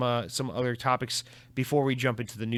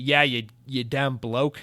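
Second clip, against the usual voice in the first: put-on Australian accent. Reading a listener's message aloud, the host imitates Jay in an Australian accent. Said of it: "I think he said in an Australian accent".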